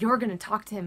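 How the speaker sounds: ordinary talk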